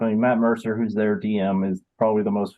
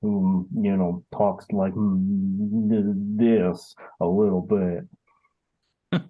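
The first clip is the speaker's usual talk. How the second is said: lazy, very slow Cajun drawl. Speaker demonstrating a character he made, slow-talking Cajun turtle voice. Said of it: "the Cajun slow talking turtle".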